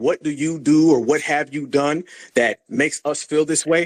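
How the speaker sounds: plain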